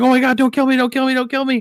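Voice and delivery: very high, tearful, crying, pleading tone. Retelling a video where two men plead with cartel gunmen, imitating crying men pleading.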